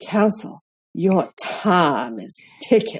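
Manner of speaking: put-on rich drawling Southern accent. Retelling a judge warning counsel in court, in a delicious Southern drawl. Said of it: "in just the most delicious Southern drawl".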